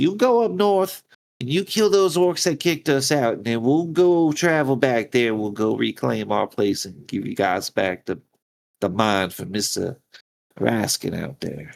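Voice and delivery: play-acted words broken up by cackling laughter. A character offers the party a deal, crackling and laughing while talking. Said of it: "she's like crackling, laughing as she's like saying it".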